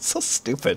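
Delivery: laughing hard while talking. Reacting to a joke during a game, laughing hard while talking. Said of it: "Why are you laughing so hard".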